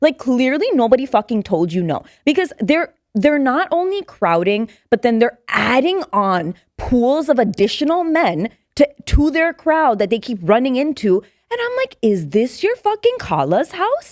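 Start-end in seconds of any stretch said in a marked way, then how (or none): 12.0-14.1 mock, swooping tone dripping with attitude. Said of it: "we had attitude".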